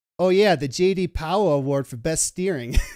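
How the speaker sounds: put-on heavy Boston accent, laid on thick. Retelling a Chevy commercial, quoting the guy in it with a thick Boston accent. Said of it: "the guy has like this thick Boston accent".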